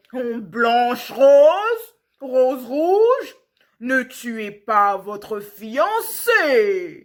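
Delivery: loud, growly bear voice, very slow. Narrator reads the bear's words to the two children teasing him, growling bear voice. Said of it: "» [name] a tiré le verrou et un gros ours brun a passé la tête dans l'entrebâillement de la porte. / Il était si lourd et si maladroit. / « Je suis le fils d'un roi, / il grognait".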